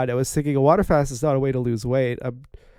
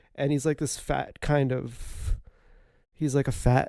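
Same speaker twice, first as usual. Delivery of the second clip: ordinary talk, nothing marked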